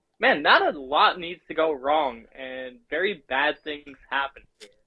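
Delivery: ordinary talk, nothing marked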